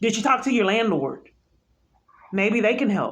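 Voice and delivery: mock-helpful sarcastic, swooping sing-song. Mocking the questions the police officer on the phone asked: sarcastic. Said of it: "I'm being sarcastic".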